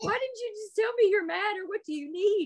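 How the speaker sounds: very high, exasperated mother voice. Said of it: "And I'm like".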